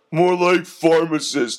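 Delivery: said through a laugh, joking. The second thug answers the first thug's claim to be a doctor, laughing. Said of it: "laughed the second".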